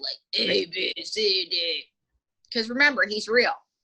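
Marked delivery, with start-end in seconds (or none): 0.5-1.8 low, very slow alligator puppet voice. Showing a learner how the puppet should sound: lowered alligator puppet voice. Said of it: "lower it".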